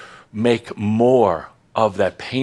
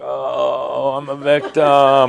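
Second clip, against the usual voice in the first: very slow put-on victim act, "oh" stretched long; 4 semitones higher than usual. Showing the audience the opposite of acting pompous: mock victim act. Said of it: "it's better than acting like".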